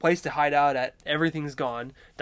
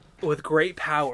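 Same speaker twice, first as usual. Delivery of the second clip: ordinary delivery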